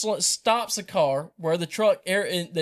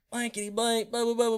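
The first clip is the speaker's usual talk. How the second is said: put-on yell, pitched high, not at full force; 6 semitones higher than usual. Retelling a confrontation in a field: imitating someone yelling. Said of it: "yelling and screaming".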